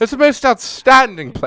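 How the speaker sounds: fake British accent, very high and very loud. Reading out an award name as a joke: put-on British accent. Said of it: "I realize it's a British voice".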